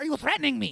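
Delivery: very high, crazed, manic, unhinged screaming. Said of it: "he literally is screaming".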